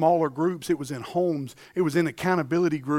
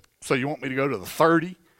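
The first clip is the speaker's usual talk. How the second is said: put-on cocky, arrogant tone, lower pitch; 3 semitones lower than usual. Speaker retells a man answering his coach, mock-arrogant. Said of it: "arrogantly he goes".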